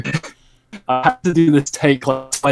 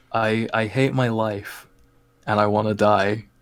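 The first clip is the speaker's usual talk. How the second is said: soft, lower voice; 3 semitones lower, 4 dB quieter than usual. Asked what they want to try saying, the speaker says it in a soft voice. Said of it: "soft voice, remember".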